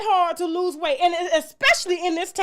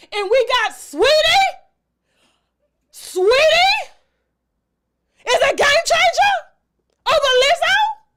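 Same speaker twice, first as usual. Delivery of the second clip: full-on, loud, rising yelling rant, building up; 8 semitones higher, 5 dB louder than usual. Speaker gets worked up mid-rant, then apologizes: yelling. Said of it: "I'm sorry for yelling".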